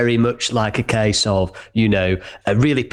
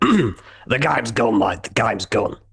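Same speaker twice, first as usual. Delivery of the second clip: put-on Australian accent, spoken slower. Speaker quotes what Ange Postecoglou would say: Ange Postecoglou impression. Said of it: "as Ange Postecoglou would say".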